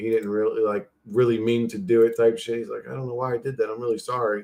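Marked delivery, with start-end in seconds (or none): 2.9-4.4 put-on apologetic tone, quieter. Retelling what a guy said after being slapped, imitating an apologetic tone. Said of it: "he was just like very apologetic".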